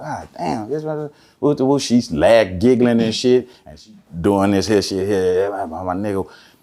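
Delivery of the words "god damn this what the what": soft, hushed half-whisper under the breath. Telling a story, recalling what they said while she dialed for help: half-whispering. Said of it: "I'm whispering like a mother".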